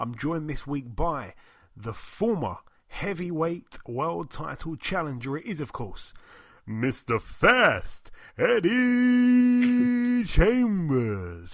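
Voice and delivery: boxing ring announcer voice. Podcast host introducing his guest, a former heavyweight challenger, boxing ring announcer voice. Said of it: "you might have a future in announcing".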